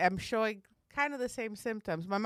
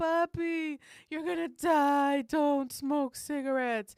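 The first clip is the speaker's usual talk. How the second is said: put-on tearful kid voice, high, slow, pleading; 6 semitones higher than usual. Retelling how the kids begged their smoking dad: imitating crying kids pleading. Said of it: "we'd go to him crying, like".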